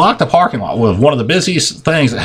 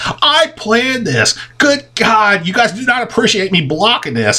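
plainly sarcastic, pitched-up, acted-out delivery; 9 semitones higher than usual. Retelling what they said to people after their car broke down blocking the way; retelling a sarcastic remark. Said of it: "And I'm being sarcastic at this point".

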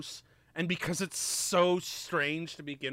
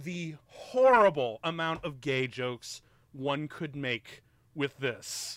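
ordinary talk, nothing marked

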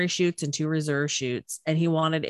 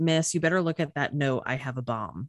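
imitated, put-on whisper. Retelling how he leaned over to the flight attendant: imitating a whisper. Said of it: "he leans over to her and whispers".

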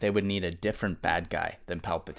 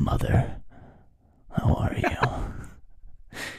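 put-on creepy character voice. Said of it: "And then he goes".

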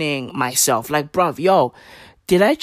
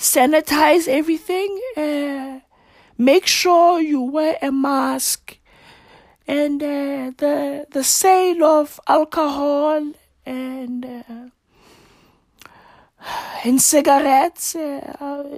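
put-on slow, drowsy official voice, higher pitch; 9 semitones higher than usual. Imitating Nkosazana Dlamini-Zuma announcing lockdown rules: Nkosazana Dlamini-Zuma impression. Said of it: "That's how she sounds all the fucking time".

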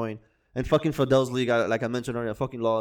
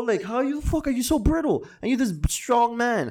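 put-on angry voice, much higher; 12 semitones higher than usual. Speaker rants about an often-injured player, mock-angry Yankee fan rant. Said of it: "I'm talking like as an angry Yankee fan".

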